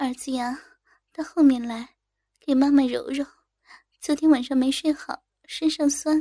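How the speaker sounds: plain reading voice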